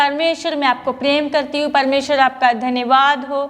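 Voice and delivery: ordinary talk, nothing marked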